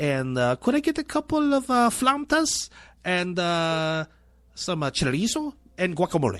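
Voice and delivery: exaggerated Spanish pronunciation of guacamole, flautas, chorizo.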